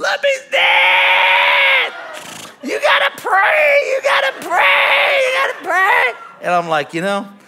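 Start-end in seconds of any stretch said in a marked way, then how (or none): 0.0-6.1 very high, loud shout with words stretched out. Retelling a phone call about the dog dying: imitating someone screaming. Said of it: "She calls me screaming".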